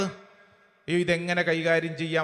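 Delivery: soft, worried, fretful tone.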